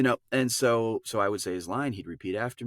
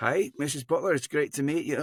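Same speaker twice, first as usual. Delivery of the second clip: fake Scottish accent, pitched up, done for show; 5 semitones higher than usual. Retelling meeting his boss's mother, the speaker greets Missus Butler in a Scottish accent. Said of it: "do your Scottish accent".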